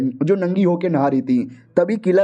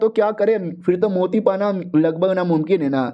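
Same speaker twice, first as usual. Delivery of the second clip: usual speaking voice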